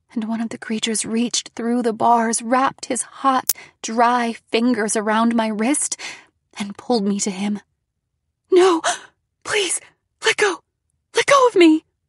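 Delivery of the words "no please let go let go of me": terrified gasps, high, loud, begging. The narrator, pulled to the bars by a creature, pleads, gasped. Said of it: "I gasped".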